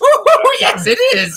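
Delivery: high, slow, loud villain voice, laughing through. Acting a scene while being choked as the Joker: laughing Joker voice. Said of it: "can you laugh and tell Kevin to take a joke".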